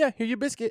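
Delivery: put-on very high, play-acted little-kid chef voice. Retelling how a toddler plays chef: imitating a toddler playing chef. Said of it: "acting like he's a chef".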